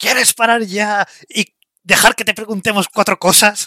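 all-out, loud, full-throated bellowing shout. Using a spell to intimidate a talking painting, shouting at full volume. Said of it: "me voy a poner la voz en plan grito pelao".

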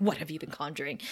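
low, soft, serious concerned tone. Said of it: "you can tell he's serious".

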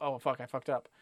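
normal talking voice

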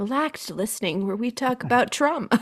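put-on public radio announcer voice. Joking about talking like a radio show the whole time: NPR radio voice. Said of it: "N P R".

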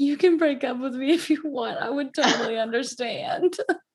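acted crying voice. Retelling what the speaker told the guy while sick, retelling saying it while crying. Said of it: "I think I was crying".

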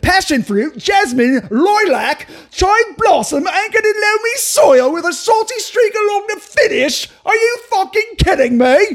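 put-on Cockney accent, very high and angry. Taking a request to do an accent, in a Cockney accent. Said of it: "You have to do a Cockney accent".

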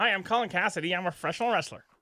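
high, dorky, nerdy voice. Joking how a wrestler sounds with his full name: mock nerdy voice. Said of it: "He sounds like such a nerd that way".

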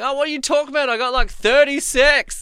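very high, very loud screaming. Retelling how a crew mate screamed out in the pre-briefing: imitating Micah screaming. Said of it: "Micah just screaming out in the pre-briefing".

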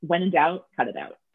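ordinary delivery

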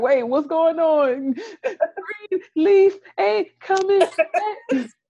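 put-on very high, slow, uncontrollable fake sobbing. Acting out another speaker's reaction to news the show won't return: mock crying uncontrollably. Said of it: "You just start crying uncontrollably".

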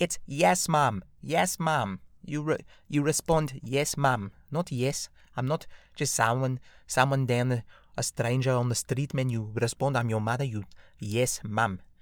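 put-on scolding, motherly South African accent. Retelling what mom said when answering without "Mom", imitating mom's South African accent. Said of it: "that's the little colored accent there".

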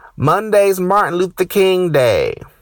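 acted, sudden loud, high yell. Retelling how a coworker yelled from her office: imitating a coworker yelling. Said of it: "she yells out of nowhere".

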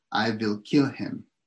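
put-on thick Danish accent. Quoting a woman's words about her husband, in her thick Danish accent. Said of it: "she said in her thick Danish accent".

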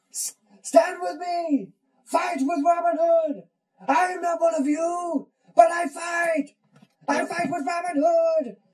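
very high, loud, rousing rallying cry. Quoting the movie scene where troops are rallied: Morgan Freeman rallying the troops. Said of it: "what does Morgan Freeman say when he rallies the troops".

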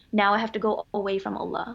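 ordinary talk

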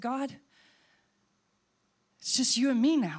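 very frightened, fearful, scared pleading voice. Recalling talking to God after he went to be with the Lord: retelling in a very frightened voice. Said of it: "In my very frightened voice".

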